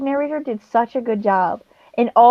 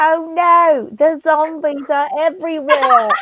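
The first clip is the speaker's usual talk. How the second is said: awful, unconvincing, fake British accent; 4 semitones higher than usual. Imitating an audiobook narrator reading a character's lines in a horrible fake british accent. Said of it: "She had this horrible fake British accent".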